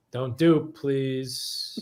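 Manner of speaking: mock exasperated pleading, at wit's end. Asked to beg the chat, sounding like a mother at her wit's end. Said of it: "You sounded like a mother who was at her wit's end".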